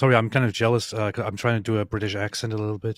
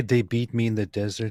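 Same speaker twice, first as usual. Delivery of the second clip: normal talking voice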